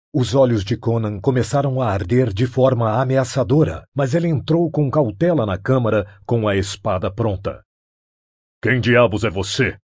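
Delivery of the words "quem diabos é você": grunted out. Conan confronts a stranger in a chamber, grunting. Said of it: "ele grunhiu".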